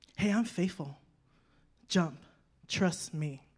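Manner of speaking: quiet whispering. Voicing god's words to the listeners, whispering. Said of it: "And he's whispering".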